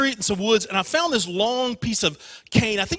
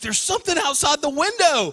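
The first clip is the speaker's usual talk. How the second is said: mock-upset voice, higher pitch; 6 semitones higher than usual. Retelling his sister telling their dad about the window: imitating sister, all upset. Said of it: "And she's all upset".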